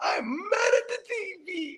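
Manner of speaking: sobbing, very high, very slow crying wail. Retelling how she cried over the tv: imitating someone crying. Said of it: "but she's crying".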